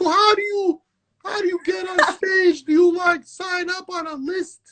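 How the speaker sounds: high-pitched Long Island voice. Recalling her early days trying to get on stage, high Long Island accent. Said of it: "my voice is so high and I have such a Long Island accent".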